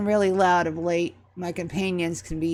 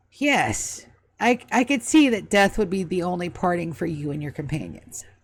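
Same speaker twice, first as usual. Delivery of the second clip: fast, heavily sarcastic, snappy delivery. A game character answers a companion's shout from the shop door, sarcastic Carlisle voice. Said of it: "He's absolutely being sarcastic".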